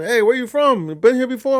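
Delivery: put-on broad Southern American accent. Retelling a young kid's questions at the cart barn, in a big southern accent. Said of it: "A big southern accent".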